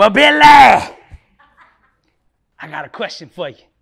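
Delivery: put-on scratchy, raspy voice. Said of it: "He got this little scratchy voice".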